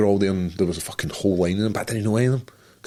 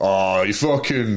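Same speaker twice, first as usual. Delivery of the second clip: put-on drunk-sounding Scottish accent, pitched right up, taunting; 12 semitones higher, 4 dB louder than usual. Retelling a story, quoting Doogie: imitating drunk Scottish Doogie. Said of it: "this is drunk Scottish".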